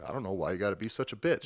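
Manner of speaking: acted-out, mock-furious angry voice. Retelling an argument with a hotel guy over a reservation: retelling an angry retort. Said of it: "I was fucking pissed at this guy".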